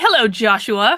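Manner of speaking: ordinary talk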